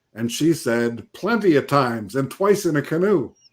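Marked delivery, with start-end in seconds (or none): 1.1-3.3 put-on Swedish accent, old grandma voice. Retelling a grandmother's story in an old Swedish grandma accent. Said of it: "this old Swedish grandma in the Swedish accent".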